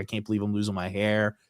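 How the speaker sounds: put-on sad, depressed voice. Retelling how Kurt Angle sat in the stands, imitating him sounding sad and depressed. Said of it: "so depressed and so sad 'cause he's like".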